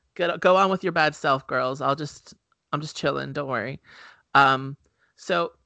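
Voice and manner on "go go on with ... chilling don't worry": ordinary talk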